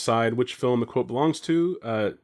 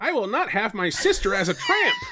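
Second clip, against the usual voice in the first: very high, squeaky, swooping puppet dummy voice; 9 semitones higher than usual. Reading the other person's film quote from IMDb aloud, in a ventriloquist dummy voice. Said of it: "That's the ventriloquist dummy voice".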